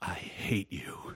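low hushed whisper, rage held down. Retelling a story about two actors on a film set, quietly retelling a line. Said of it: "looks back down and quietly says".

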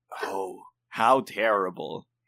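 put-on wicked, nefarious, evil-sounding voice. Asked by the other speaker to do their most nefarious voice: nefarious voice. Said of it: "I'm just using this nefarious voice".

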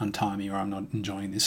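ordinary talk

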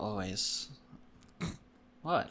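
sounding sad. Asked if ready for a sports minute, answering briefly; sounding sad. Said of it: "You just sound so sad".

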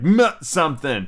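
ordinary delivery

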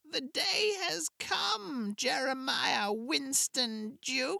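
very high, slow, scratchy, broken hag voice. Narrator reads the witch speaking to a man as a portal closes: broken, scratchy witch voice.

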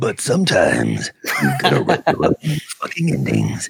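very deep, low, swooping movie trailer narrator voice. Repeating a story's closing line: movie trailer guy voice. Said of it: "the movie trailer guy doing that".

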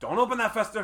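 put-on very high, loud, accented voice. Quoting an actor's line from the movie: Dan Hedaya impression. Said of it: "That accent is so".

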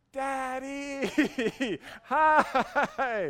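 shrill, very high, very loud yell. Retelling how a son called across a crowded pool: imitating a child yelling. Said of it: "he's yelling over everyone".

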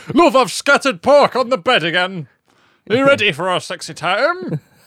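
high, theatrical actor voice. Imitating Scott Parker speaking to his wife: Scott Parker impression. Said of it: "That's how he talks".

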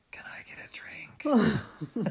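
very slow, drawn-out whisper. Retelling how he asked for a drink: imitating a whisper. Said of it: "And he whispers".

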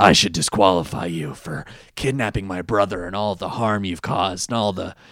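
deep, low, utterly solemn and dead serious. Retelling Kaiba's threat to disqualify Odion: imitating Kaiba, very serious. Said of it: "he gets so serious about it".

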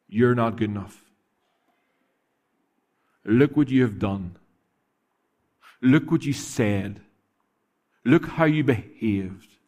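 put-on evil-sounding whisper. A speaker tells the room how Satan whispers in your ear: evil whisper as Satan. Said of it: "whispering in that evil, evil voice".

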